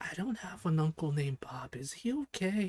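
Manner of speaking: hushed, quiet whisper. As the other two talk, Hollow leans over to Julia: Hollow whispering. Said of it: "leans over to you and whispers".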